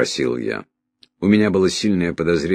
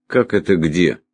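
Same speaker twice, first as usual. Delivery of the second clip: usual speaking voice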